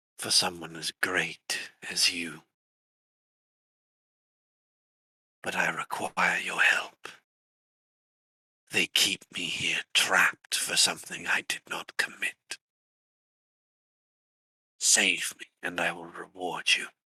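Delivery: whispering voice as if right at the ear. A voice reaches a player through a little spider, a soft whisper in the ear. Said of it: "Nira, you hear a voice. Something soft, almost like someone whispering in your ear. / Something soft, almost like someone whispering in your ear".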